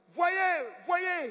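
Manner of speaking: high, loud, shouted preaching voice. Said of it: "il hausse la voix".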